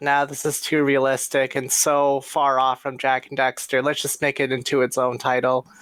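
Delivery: plain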